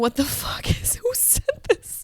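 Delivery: put-on, high, half laughing, half sobbing disbelief. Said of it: "we were laughing and crying".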